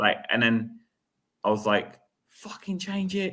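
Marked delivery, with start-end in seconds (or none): 2.3-3.3 put-on scream, higher. Retelling screaming at the manager during a match: imitating own screaming. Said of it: "I started screaming at Ange".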